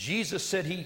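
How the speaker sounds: usual speaking voice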